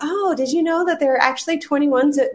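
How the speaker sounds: high, sugary, snarky voice laying on the sarcasm.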